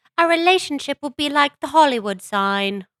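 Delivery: high, put-on British accent. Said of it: "I don't know why that came out British".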